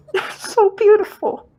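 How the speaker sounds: mock tearful sobbing.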